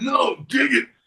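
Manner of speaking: very high, gravelly shout. Showing how a wrestler talked on camera: Macho Man gravelly voice. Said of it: "he didn't talk like this".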